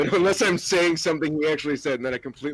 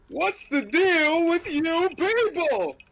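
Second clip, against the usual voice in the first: very high, drawn-out comedian voice, pitched way up; 14 semitones higher than usual. Announcing an impression, then doing a Jerry Seinfeld impression. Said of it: "Here's my racist Jerry Seinfeld impression".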